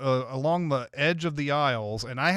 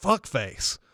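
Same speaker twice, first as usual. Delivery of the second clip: put-on muttering under the breath. Retelling a mutter at a shopper blocking the aisle: retelling muttering under breath. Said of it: "under my breath".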